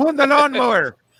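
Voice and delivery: put-on high, loud old Irish man accent. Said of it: "that's how my grandfather sounded".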